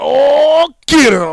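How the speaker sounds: very loud, high ringside commentator holler, stretched-out belted oh. Retelling a wrestling commentary moment: imitating Booker T. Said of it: "He's like".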